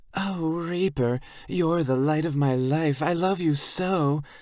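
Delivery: very high, pitchy mocking voice pushed way up. Reading a scene where a biker mockingly imitates a girl: high, pitchy mock imitation of Sarah. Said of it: "His voice is all high and pitchy".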